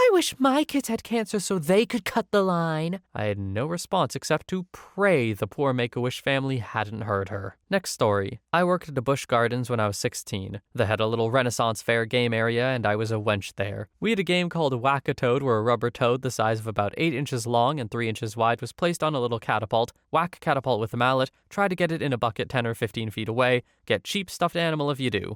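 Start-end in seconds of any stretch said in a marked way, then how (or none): 0.0-3.0 high-pitched, angry, sharp voice. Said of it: "the mother got very angry and said".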